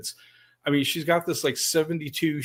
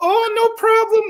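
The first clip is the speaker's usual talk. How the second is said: very high, loud, put-on broken English; 7 dB louder than usual. Retelling the driver who missed the off ramp, imitating her broken English. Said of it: "with her broken English".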